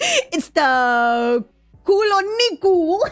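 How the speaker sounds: Spanish accent, stretched "the". Talking to Nikki, saying the word the only way the speaker can: Spanish accent. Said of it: "The Spanish in me is gonna say it with a Spanish tone".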